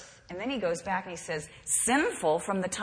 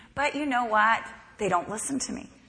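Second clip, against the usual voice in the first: plain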